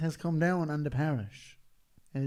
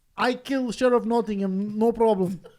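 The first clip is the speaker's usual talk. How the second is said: mock wooden, barked-out, stiff shouted delivery; 4 semitones higher than usual. Retelling an actor doing his lines on opening night: imitating someone shouting. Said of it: "But they fucking shout".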